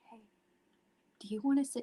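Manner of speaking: mimicked whisper. Retelling sitting back down, speaker quotes him asking whether they want to sit, imitating a whisper. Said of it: "Because he's whispering to me".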